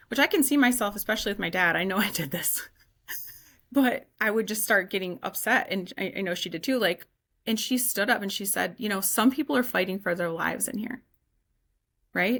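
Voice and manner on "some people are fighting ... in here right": normal talking voice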